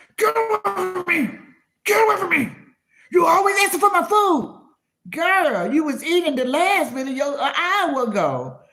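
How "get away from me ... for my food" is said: wild, high-pitched snarling and growling. Imitating someone yelling at their children about food: imitating someone snarling and growling. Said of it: "snarling and growling at your children".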